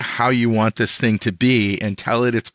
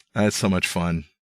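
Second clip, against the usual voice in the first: plain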